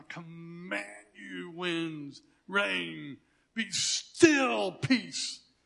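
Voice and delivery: put-on authoritative tone, very slow and commanding. Speaker describes his mental picture of Jesus stretching out his hand; imitating Jesus, authoritative. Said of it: "this authoritative voice".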